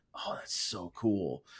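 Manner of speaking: hushed, breathy, soft, slow whisper. Retelling what a tape kid said into the headset: imitating a whisper. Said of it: "just whisper".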